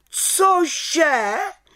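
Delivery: witch voice, high, sudden outcry, exclaimed. The head witch, hearing about the little witch's Friday spell-casting, cried out. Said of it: "Vykřikla vrchní čarodějnice".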